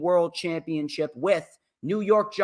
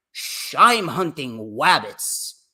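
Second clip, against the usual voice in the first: swooping cartoon hunter voice, rabbits said as wabbits; 3 semitones lower, 3 dB louder than usual. Mocking own stumbling speech with a quick cartoon impression: Elmer Fudd voice. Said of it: "Elmer Fudd".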